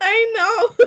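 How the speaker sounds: high, loud laughing while crying.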